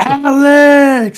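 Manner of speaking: screaming, high, loud laughing yell.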